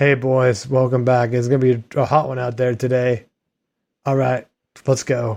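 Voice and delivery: mock deadpan, no-energy, low, flat monotone coach voice. Speaker imitates a low-energy coach greeting the players, in a flat monotone. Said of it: "He's like monotone now".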